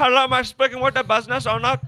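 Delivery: very high-pitched put-on Indian call-centre accent. Describing telemarketer calls to the business, imitating the caller in an indian accent. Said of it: "that was a spot on Indian impression".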